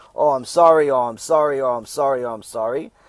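mock sugary, over-nice, fawning, repeated words. Retelling how the supposed owner suddenly called back apologizing, mock-nice apology. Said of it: "all of a sudden everything is nice".

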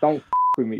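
mock impassioned delivery. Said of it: "I get passionate".

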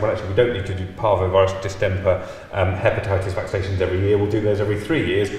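ordinary delivery

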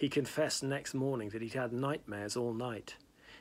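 ordinary delivery, nothing marked

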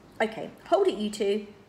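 plain reading voice

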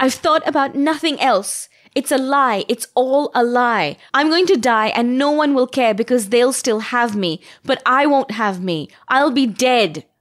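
high, furious shriek of rage. Reading a novel: Sarita shrieks back at the person telling her to stop; shrieking in rage. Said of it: "I shrieked, with a rage that surprised me".

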